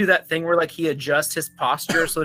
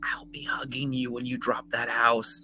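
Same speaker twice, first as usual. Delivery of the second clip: softest, very quiet whisper, barely audible; 4 semitones lower, 10 dB quieter than usual. Speaking in character so only Emrys hears: softest whisper. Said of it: "I'm gonna whisper in the softest voice ever".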